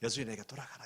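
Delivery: soft, unvoiced, breathed-out whisper.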